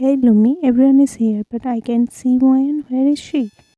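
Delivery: ordinary delivery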